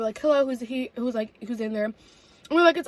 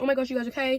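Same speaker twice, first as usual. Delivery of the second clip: put-on frightened, scared voice, quieter; 4 dB quieter than usual. Retelling how a scared mom checked on her kids: imitating a scared mom. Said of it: "she was really scared".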